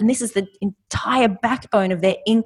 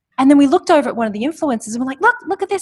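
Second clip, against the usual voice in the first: usual speaking voice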